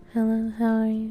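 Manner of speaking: tiny, barely-there, soft voice. Retelling what a customer said at work: imitating a very quiet voice. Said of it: "literally the quietest voice she could hear".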